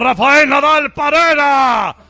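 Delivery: high, slow, booming tennis commentator-style shout.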